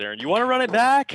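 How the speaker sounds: high, loud, projected shout.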